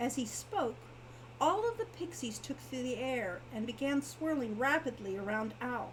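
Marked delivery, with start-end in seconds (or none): none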